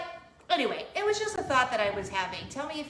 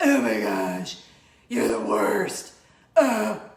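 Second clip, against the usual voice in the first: put-on loud, creaky, tormented teenager groan; 7 dB louder than usual. Speaker shows the teenager voice used on a husband: put-on teenager voice. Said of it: "That's my teenager voice".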